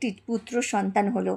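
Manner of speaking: plain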